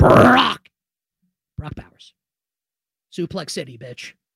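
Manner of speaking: hushed, low, hyped-up wrestling manager announcer voice. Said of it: "Should I do my Paul Heyman voice?".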